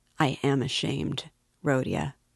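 plain reading voice

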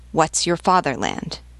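ordinary delivery

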